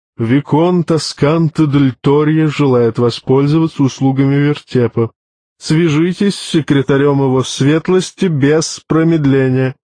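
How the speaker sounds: plain reading voice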